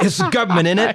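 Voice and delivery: very high, loud, terrible fake British accent. Imagining angry Brits adjusting their roof antennas, voicing them in a terrible British accent. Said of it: "that's a terrible accent".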